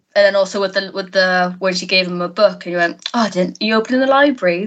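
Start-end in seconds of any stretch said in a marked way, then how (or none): 3.2-4.7 heavy, pointed, sarcastic tone. Recalling the scene where she gave Basil a book; mock-sarcastic Basil Fawlty line. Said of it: "just the sarcasm in that".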